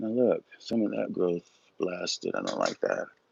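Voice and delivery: muttered, mumbling under the breath. Working while taking viewers along, commenting on the result: mumbling to oneself. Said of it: "I'm kind of mumbling to myself".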